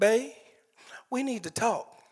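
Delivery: high, gentle, sweet, earnest voice. Retelling how his wife started a talk: imitating a sweet sincere plea. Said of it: "She came in really sweet and she said".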